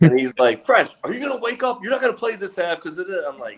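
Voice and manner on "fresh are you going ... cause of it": mock, very high-pitched, scolding yell. Retelling what the coach said at halftime: imitating a coach yelling. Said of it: "so Coach Jones yells at me".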